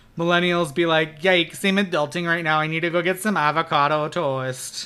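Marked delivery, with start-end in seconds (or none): 1.2-4.9 playful put-on Minnesotan accent. Mocking how millennials talk, just for fun, in a put-on Minnesotan accent. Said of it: "I did that in a Minnesotan accent".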